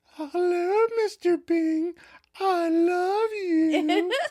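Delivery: put-on very high falsetto coo. Retelling a sitcom scene, a friend prank-calls a man in a high falsetto voice. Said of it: "in a high falsetto voice".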